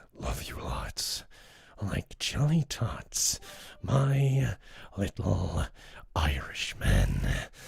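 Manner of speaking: very slow, chilling, terrifying menacing delivery. Speaker shows how a sweet nickname could be said, terrifying delivery. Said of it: "Then it's kind of terrifying".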